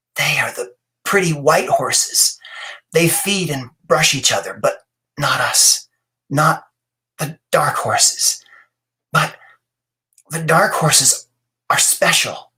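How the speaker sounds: faint, thin, whispery voice. Mother goes on speaking to Vale after a coughing fit, in a thin, whispery voice. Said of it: "continued in a thin, whispery voice".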